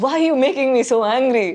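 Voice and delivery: acted, high, tearful crying outburst through tears. Retelling getting angry at people at home: imitating own past crying. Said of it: "I start crying".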